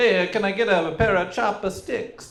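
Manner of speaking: put-on heavy, thick Italian accent, very high-pitched. Playing a customer ordering food in a comedy bit: thick Italian accent. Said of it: "with a thick Italian accent".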